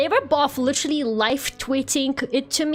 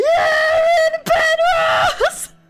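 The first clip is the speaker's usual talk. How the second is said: play-acted, very high, winded, breathless cheering shout; 6 dB louder than usual. Recounting running onstage as the name is announced, imitating being out of breath. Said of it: "Completely out of breath".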